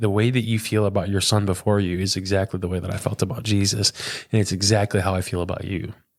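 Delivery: plain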